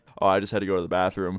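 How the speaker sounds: plain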